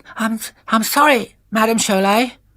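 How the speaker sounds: timid little voice. A narrator reads Orinoco's scared apology, in Orinoco's small voice. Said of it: "said Orinoco in a small voice".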